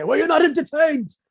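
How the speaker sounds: very high, loud, rushed belting delivery. Quoting a line as Russell Crowe would say it, doing a Russell Crowe impression. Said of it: "as Russell Crowe would say".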